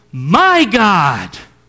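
heavy emphasis on the word my. Quoting his call upon God in the wilderness: strong emphasis on 'my'. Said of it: "I'm going to say it with emphasis".

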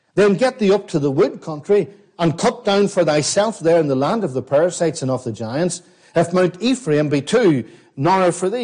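usual speaking voice

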